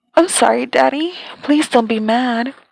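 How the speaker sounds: put-on babyish baby talk, toddler-like little voice. Reading a story aloud, voicing a character's plea: talking like a baby. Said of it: "talking like a baby".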